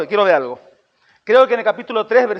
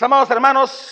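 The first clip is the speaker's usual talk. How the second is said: solemn put-on preacher voice; 4 semitones higher than usual. Imitating someone who sounds wise when preaching: imitating a preacher's changed voice. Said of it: "que cambia la voz".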